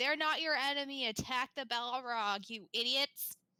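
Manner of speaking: loud yell. A player in a tabletop game has their character yell at the dwarves: yelling. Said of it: "So then I am just gonna yell".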